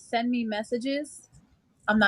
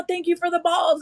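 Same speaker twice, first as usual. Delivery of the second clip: put-on screaming, way too loud and high; 6 semitones higher, 3 dB louder than usual. Retelling speaking aloud while people nearby listen: imitating own screaming. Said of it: "I'm, like, screaming".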